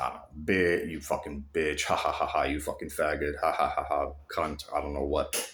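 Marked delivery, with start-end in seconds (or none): 0.3-4.6 sarcastic, jeering cursing broken by mocking ha-ha laughs. Retelling how a man on a bridge cursed and laughed: imitating sarcastic cursing and laughing. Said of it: "laughing and being, like, very, very, like, sarcastic".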